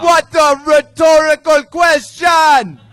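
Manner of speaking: put-on Jamaican accent. Joking with the others on stage: put-on Jamaican accent. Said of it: "this is my Jamaican accent".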